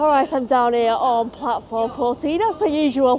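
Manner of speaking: slightly winded, a little out of breath. Vlogger on the platform just after running for the train, a little out of breath. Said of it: "A little bit out of breath".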